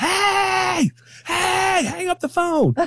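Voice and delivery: acted, very high, shrill scream with hey stretched long. Retelling how mama screamed into the phone: imitating someone screaming. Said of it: "she starts screaming into the phone".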